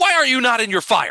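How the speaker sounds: aggravated. Describing the scene, the baker points at the creature and speaks, aggravated. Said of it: "And he seems aggravated".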